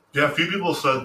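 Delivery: talking while chewing. Speaker joins the conversation while eating, talking while chewing. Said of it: "Sorry, I'm chewing".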